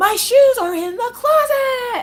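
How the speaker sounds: very high, very loud, drawn-out yell. Describing Maggie yelling in the speaker's face, imitating Maggie yelling. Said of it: "please stop yelling at me".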